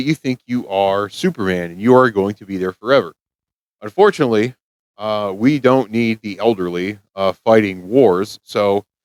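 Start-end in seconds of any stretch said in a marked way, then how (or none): none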